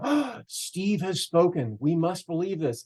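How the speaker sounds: mocking, a little sarcastic put-on voice. Imitating people who treat his words as holy: sarcastic put-on quote. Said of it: "that was a little sarcastic".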